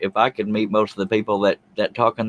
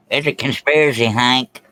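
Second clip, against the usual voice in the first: put-on paranoid cartoon voice, getting louder; 3 semitones higher, 4 dB louder than usual. Running through cartoon impressions: Dale Gribble impression. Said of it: "That was Dale Girl".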